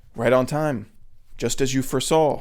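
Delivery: ordinary delivery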